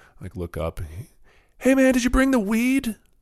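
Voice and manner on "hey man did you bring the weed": mock shout, much higher, louder. Storyteller acts out a man yelling from a window three floors up, retelling a yell. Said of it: "Just yells that".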